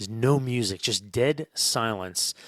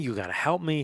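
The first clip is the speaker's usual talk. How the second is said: frantic, urgent, pleading cry; 4 semitones higher than usual.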